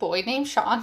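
ordinary talk, nothing marked

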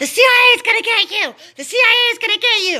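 piercing, high-pitched, shrill acted-out shriek. Retelling how a man screamed down the hallway: imitating someone screaming. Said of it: "he starts screaming down the hallway".

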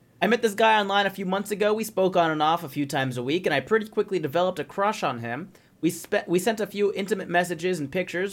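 ordinary talk, nothing marked

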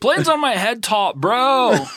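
very high, badly acted, hammed-up voice. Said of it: "like if Crush's voice actor was no good".

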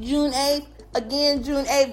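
school principal intercom announcement delivery. Podcast host giving listeners a reminder the way principals do on announcements: school principal announcement voice. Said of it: "you have to say it like how the principals be saying it on the announcements".

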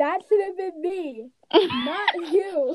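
acted sobbing through words, high tearful crying voice. Retelling a reaction to a TV dance scene: mock crying while retelling. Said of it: "I was crying because it was the dance".

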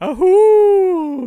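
very loud, very high-pitched animal cry. Answering a request to do the creature's call: imitating the ahul's call. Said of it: "Do you wanna do it for us?".

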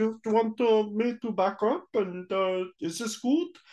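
put-on German accent. Speaker describes an actor in Office Space, quoting him in a German accent. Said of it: "he's doing a German accent".

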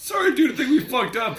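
put-on very high-pitched voice with a Canadian accent. Quoting a favorite Trailer Park Boys line as Corey: impression of Corey from Trailer Park Boys. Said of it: "You do a much better impression of me".

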